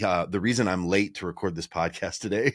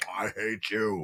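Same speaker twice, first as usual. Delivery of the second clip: mock talking with mouth full, much slower; 5 dB quieter than usual. Retelling what she said through a mouthful of eggs and toast, imitating talking with mouth full. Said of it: "just a mouthful of full of like eggs and toast".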